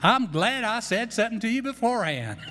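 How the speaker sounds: put-on strong Texan accent, laid on. Quoting a woman's reply to another woman, in a strong Texas accent. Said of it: "Strong Texas accent".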